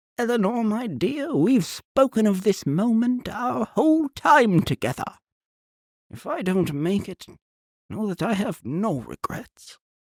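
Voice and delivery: gentle, soft-spoken voice. Turning from the shouting to speak to the First Lady, his voice grown soft. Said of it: "All these voices [name] is doing".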